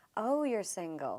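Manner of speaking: slow, drawn-out, pitying tone.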